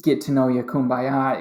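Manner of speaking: ordinary talk, nothing marked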